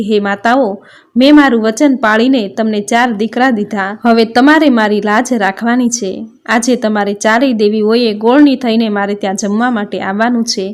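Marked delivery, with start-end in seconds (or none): none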